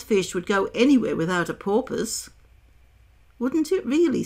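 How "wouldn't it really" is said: astonished, greatly surprised, disbelieving tone. A narrator reads Alice answering the Mock Turtle; in great surprise. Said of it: "in a tone of great surprise".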